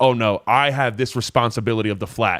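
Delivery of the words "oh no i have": ordinary delivery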